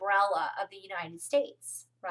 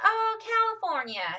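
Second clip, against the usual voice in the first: put-on high Kentucky Southern accent; 12 semitones higher than usual. Quoting a lady who asked where the speaker is from, in a Kentucky accent. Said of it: "she says it with her accent".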